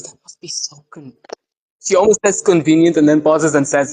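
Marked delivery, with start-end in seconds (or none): 0.0-1.1 soft, hushed, barely voiced whisper. Quoting what she whispered before pausing, retelling a whisper. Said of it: "She just whispers".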